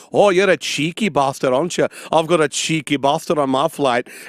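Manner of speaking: put-on northern English accent. Retelling what a man on their flight said to them, northern english accent. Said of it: "he has like a northern English accent".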